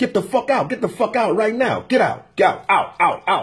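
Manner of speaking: put-on harsh, stern tone. Retelling how a man ordered him out: imitating someone ordering him out. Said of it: "talking to me like I'm a dog".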